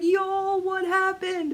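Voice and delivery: mock very high, panicked cry. Retelling calling friends on Zoom in a panic: retelling own panic. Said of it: "of course I'm panicking and Zooming my girls".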